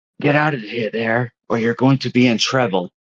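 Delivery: loud, theatrical stage whisper. Voicing a wizard statue warning a player character: stage whisper. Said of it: "the stage whispers".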